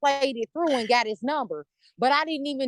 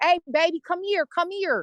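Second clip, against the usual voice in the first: put-on, casual street-style call, yelled out like a man; 4 semitones higher than usual. Retelling how a man at the gas station called to her: imitating a man yelling. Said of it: "he was yelling at me".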